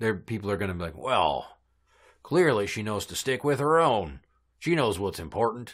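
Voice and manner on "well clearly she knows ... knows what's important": put-on Southern US accent voice.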